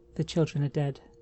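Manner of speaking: ordinary delivery, nothing marked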